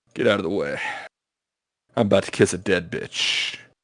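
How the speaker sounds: strutting, full-of-himself royal swagger. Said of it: "comes strutting out with his fucking feather hat".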